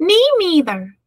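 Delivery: tiny, high-pitched, mousy little storybook voice. Reading a story aloud, voicing a mouse joining the boars' talk, tiny little voice. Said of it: "said a tiny little voice".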